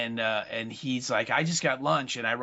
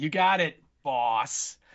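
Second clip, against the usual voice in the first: put-on condescending tone; 2 semitones higher than usual. Retelling a film scene where a character answers the boss: imitating a condescending reply. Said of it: "but it's the most condescending".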